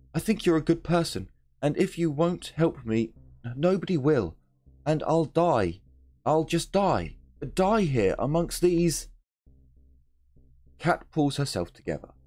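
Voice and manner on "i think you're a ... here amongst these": frantic, desperate, worn-out pleading. Reading a game aloud, voicing Cat begging for help, desperate and pleading.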